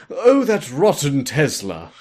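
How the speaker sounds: put-on British accent. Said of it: "Why am I doing a British accent?".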